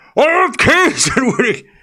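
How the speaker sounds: very high-pitched, loud screaming shriek. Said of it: "I'm glad that David Attenborough doesn't go".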